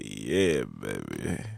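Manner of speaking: put-on very low, rough, creaky voice, "baby" stretched out. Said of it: "I should be talking like [name]".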